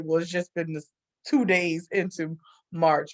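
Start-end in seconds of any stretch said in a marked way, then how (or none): none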